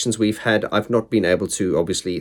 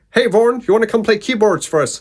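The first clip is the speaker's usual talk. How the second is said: put-on high and quick Bristolian accent; 12 semitones higher, 4 dB louder than usual. Retell how Rich Silverthorne called you up on a Sunday, in Rich Silverthorne's Bristolian accent. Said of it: "in his beautiful Bristolian accent".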